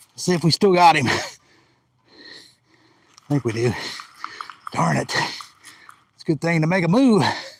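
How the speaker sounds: heavy, out-of-breath breathing. Talking to the camera just after running a hundred yards: heavy breathing. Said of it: "Sorry about the heavy breathing".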